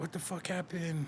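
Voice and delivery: mock, quiet, pissed-off, demanding tone. Speaker retells his dad's reaction when he comes home, mock-angry dad. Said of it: "And he's all pissed".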